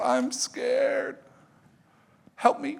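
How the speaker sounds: mock very high, drawn-out, slow sobbing. A dad retells his daughter at the pool, imitating her crying. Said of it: "she starts crying".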